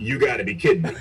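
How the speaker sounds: normal talking voice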